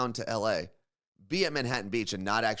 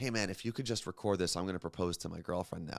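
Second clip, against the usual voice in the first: hushed, low, close half-whisper; 4 semitones lower, 6 dB quieter than usual. Retelling a guy who came very close to him and half-whispered. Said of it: "he whispers".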